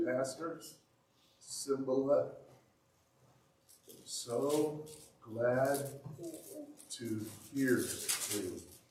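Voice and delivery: weak, fragile, halting, wispy, very slow voice. Retelling a phone call with a very weak man, imitating Ricardo's wispy, fragile voice. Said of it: "I heard a wispy, fragile voice say".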